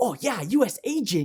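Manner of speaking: high, giddy, gushing voice. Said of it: "he's all giddy about it".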